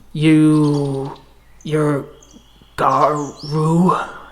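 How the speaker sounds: halting, broken, strained growly speech. A game master voices a figure speaking broken Garu tongue, struggling to get the growls right. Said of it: "struggling to get the right growls in his voice".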